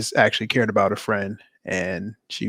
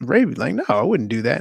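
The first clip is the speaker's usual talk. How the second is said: mock offhand, breezy, casual, matter-of-fact tone; 3 semitones higher than usual. Retelling how he casually answered her question: imitating a casual, matter-of-fact reply. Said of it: "he just says it so casually".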